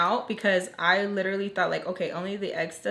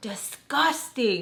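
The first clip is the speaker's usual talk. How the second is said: imitated screaming voice; 3 semitones higher than usual. Retelling how she screamed in his face: imitating someone screaming. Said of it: "screaming in his face".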